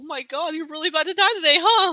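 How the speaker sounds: very loud, high, on the brink of tears. Player voices his character reacting to someone about to die: on the brink of tears. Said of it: "He's like on the brink of tears".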